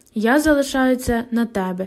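plain

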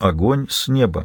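ordinary delivery

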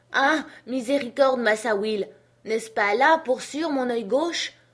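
loud, high roar of sheer terror. Jupiter answers Massa Will's shouted demand, roaring in terror. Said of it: "rugissait Jupiter épouvanté".

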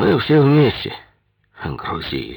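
condescending, muttered through the teeth. A man answers the claim that he overloaded the rafts: condescending, through the teeth. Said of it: "процедил Вилков".

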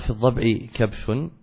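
ordinary talk

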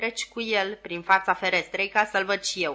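ordinary delivery

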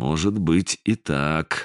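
careful tone. One character answers another's claim about illusions: cautious reply. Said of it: "осторожно ответил Сизый".

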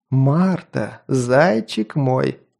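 slow drawl with long, stretched vowels. A maniac greets another man, looking into his eyes; drawled. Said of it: "протянул маньяк".

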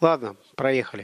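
ordinary delivery, nothing marked

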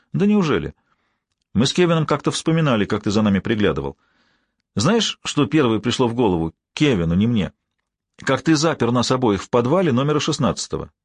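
plain reading voice

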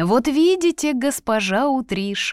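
snide, sneering voice. Narrator reading an official refusing Dora Utrish her documents, snide. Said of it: "ехидно заметил он".

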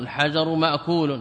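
normal talking voice

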